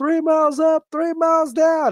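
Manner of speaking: high, slow call, second half dragged out. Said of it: "I saw him and I was like".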